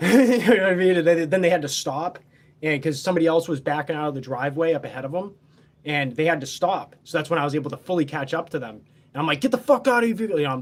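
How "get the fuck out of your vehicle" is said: furious, high-pitched angry scream. Retelling catching up to a driver, reenacting screaming at them. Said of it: "I'm screaming at them".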